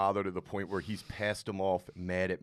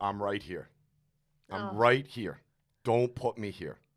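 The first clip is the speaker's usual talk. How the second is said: angry, put-on voice. Imitating a father warning when he gets mad: imitating an angry dad. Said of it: "when he gets mad, he will go".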